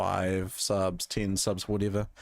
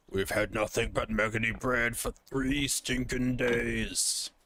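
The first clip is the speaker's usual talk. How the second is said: put-on fantasy orc voice, "days" drawn out; 3 semitones higher than usual. Speaker practicing orc voices tries one out, in an orc voice. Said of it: "work on my orc voices".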